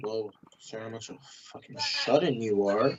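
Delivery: soft mumble under her breath.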